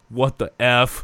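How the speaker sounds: mock screamed, livid, raging outburst. Retelling Tomlin raging on the sideline: imitating Tomlin screaming. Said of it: "He's screaming, like".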